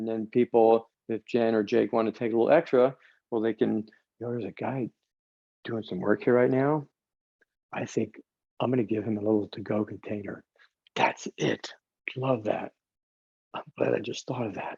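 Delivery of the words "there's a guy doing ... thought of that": whisper, quieter. Speaker cooking and serving food, with a worker nearby, whispering. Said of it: "Not sure why I'm whispering that".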